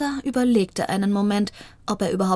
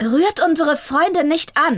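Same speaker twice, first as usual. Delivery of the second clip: sudden, pitched-up calling out; 6 semitones higher, 4 dB louder than usual. As a gang growls at their friends, a voice suddenly calls out; called out suddenly. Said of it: "rief da plötzlich eine Stimme".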